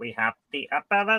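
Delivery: put-on alien voice. Bringing up a character creator on a Star Trek show: Dalek voice. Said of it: "I'm doing a Dalek voice".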